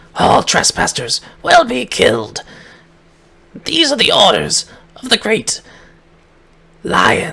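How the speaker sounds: snarling creature voice, high-pitched. A creature snarls a warning at the intruders, giving the great lion's orders: snarling creature voice. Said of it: "it snarls back at you".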